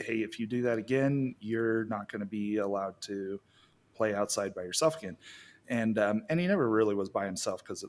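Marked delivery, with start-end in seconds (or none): none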